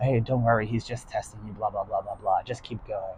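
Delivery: very low, hushed, secretive half-whisper. Retelling what a man half-whispered in a woman's ear; half-whispering. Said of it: "the guy whispers in the blonde lady's ear".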